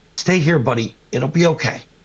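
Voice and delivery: whispered delivery. Player's character whispers to frightened Reg, whispering. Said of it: "I just whispered to Reg".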